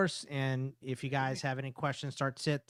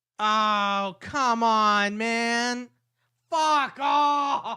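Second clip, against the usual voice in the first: very loud, very slow, high, frustrated yell; 8 semitones higher, 8 dB louder than usual. Reacting angrily to a flag while watching the game: yelling in frustration. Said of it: "I've yelled too loud".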